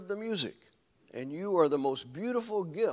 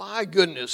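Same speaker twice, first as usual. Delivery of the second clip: amused, chuckling through the words; 2 semitones higher, 8 dB louder than usual. The man in the red suit, holding a bear searching for Christmas, chuckling. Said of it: "he chuckled".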